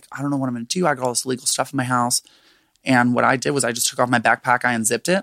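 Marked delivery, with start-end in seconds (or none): 0.1-2.2 panicked, freaking-out voice. Retelling what a friend said when the police were called: imitating a friend freaking out. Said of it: "he starts freaking out".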